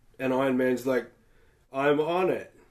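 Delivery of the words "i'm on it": mock utterly unbothered, bored, offhand throwaway tone. Retelling a game trailer reply, bored Iron Man impression. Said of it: "It just sounds real bored".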